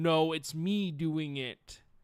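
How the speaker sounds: slow, deliberate, unhurried horror-creature voice. Answering as the monster in a made-up exchange: Pyramid Head impression. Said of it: "Pyramid Head's going".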